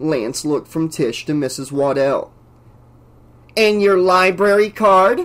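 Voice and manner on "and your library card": raised, pitched-up, contemptuous, sneering scornful tone. Miss Waddell questions a crying girl at the library counter; scornful. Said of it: "asked Miss Waddell scornfully".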